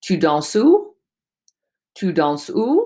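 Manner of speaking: pitch lifts upward on final word où. Demonstrating a French intonation question, rising question intonation. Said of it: "I'm raising my voice at the end".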